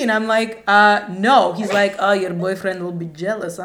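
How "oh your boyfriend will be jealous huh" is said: put-on Transylvanian accent. Retelling what a man said to her after she refused him, in a Transylvanian accent.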